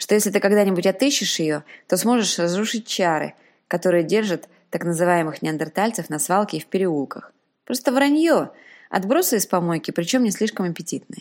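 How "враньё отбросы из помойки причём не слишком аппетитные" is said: plain reading voice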